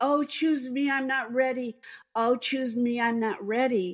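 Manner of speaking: yelling, crying out, pitched high. Speaker recounts a vision of being chosen, retelling own yelling. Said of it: "And I was yelling".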